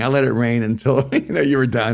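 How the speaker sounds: words laughed through, chuckling delivery. Retelling hearing God speak as the rain stopped: God laughing. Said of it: "hear, like, God laughing".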